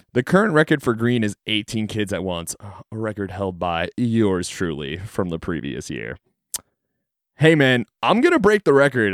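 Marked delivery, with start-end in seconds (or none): 7.3-9.1 acted-out call, shouted downward. Retelling yelling down a water slide to a coworker: retelling a yell. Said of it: "I yell down".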